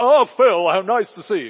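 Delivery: loud booming voice. Speaker imagines the bishop greeting him at the station, Bishop Martin's loud booming voice. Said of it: "in his delightfully loud booming voice".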